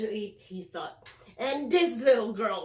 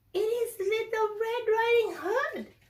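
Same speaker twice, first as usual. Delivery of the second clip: very high, squeaky, disguised put-on girl voice; 12 semitones higher than usual. Narrator reading the wolf answering at grandmother's door: squeaky fake voice. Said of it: "said the wolf in a squeaky voice".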